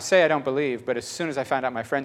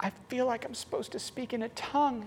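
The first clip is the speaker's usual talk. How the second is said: high, hushed, embarrassed voice. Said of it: "She's just so embarrassed".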